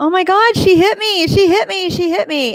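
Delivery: play-acted, very high, loud squealing scream. Retelling how a man runs down the street: imitating someone screaming.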